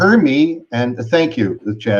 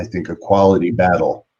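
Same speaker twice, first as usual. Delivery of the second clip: ordinary talk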